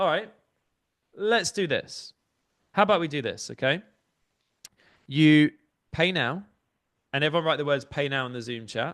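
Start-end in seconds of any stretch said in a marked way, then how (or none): 0.0-2.1 authoritative, commanding, pitched-up rallying tone full of conviction. Speaker showing a Zoom audience how to say the phrase, commanding with conviction. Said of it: "You say it in a commanding way with conviction".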